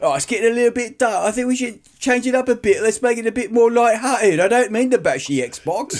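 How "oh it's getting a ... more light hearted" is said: decent put-on Cockney accent, pitched up. Speaker retelling someone's remark to their dad, in a Cockney accent. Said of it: "a good accent".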